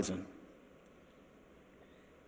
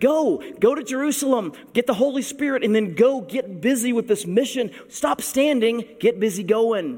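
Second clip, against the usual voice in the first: high, sarcastic prodding tone. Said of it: "there's some sarcasm there".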